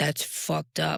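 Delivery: voice dropped low. Saying what a therapist might tell a client, deeper voice. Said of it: "See how my voice just deepens when I say that?".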